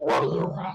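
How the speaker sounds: big, raspy, very deep, gravelly monster voice. Voicing a monster that senses someone at the door, in a big raspy gravelly voice. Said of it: "big, kind of raspy, kind of gravelly voice".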